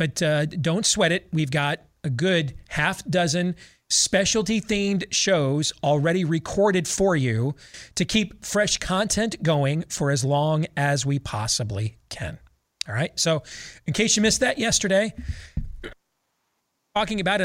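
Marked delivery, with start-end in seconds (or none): 13.9-17.4 getting choked up, voice rising higher. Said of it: "I'm getting all choked up".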